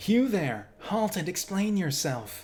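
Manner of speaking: fantasy elf voice. Speaker voicing characters in a game, elf voice. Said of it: "That's an elf voice right there".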